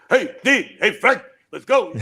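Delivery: slowed-down, easy, relaxed delivery. Showing how he played a part in a movie: Joey Bishop impression. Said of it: "You were a great Joey Bishop".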